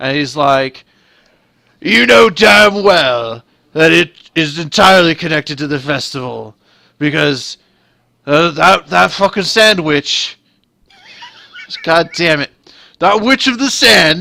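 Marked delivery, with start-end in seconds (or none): 1.8-14.2 put-on loud, pitched-up, combative drunken haranguing. Telling a story, voicing a drunk guy who comes around the corner, imitating a belligerent drunk. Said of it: "this sort of belligerent drunk guy".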